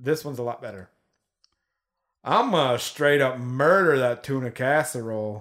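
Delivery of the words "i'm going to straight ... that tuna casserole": put-on slow country Texas drawl. Taking a turn in an accent game, saying a test sentence in a redneck Texas accent. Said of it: "Is that a Texas accent?".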